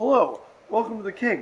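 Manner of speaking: mechanical, high robot voice. Retelling a waiter who seemed like a robot: imitating a robotic waiter. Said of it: "he was robot server".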